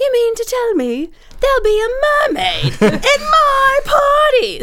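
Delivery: put-on very high, jazzed, swooping English accent exclamation. Retelling what an English party sponsor said to another sponsor, in an English accent. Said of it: "so I have to use his accent".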